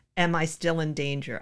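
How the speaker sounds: plain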